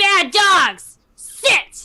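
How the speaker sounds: loud, high yell in Giant. A player's character yelling at the wolves, yelling in Giant. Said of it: "I'm going to yell in giant".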